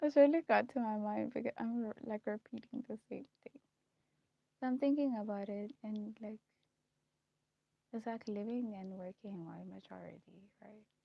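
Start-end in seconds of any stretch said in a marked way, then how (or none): 0.0-3.6 very loud speech broken by laughter. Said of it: "I don't know why I'm laughing".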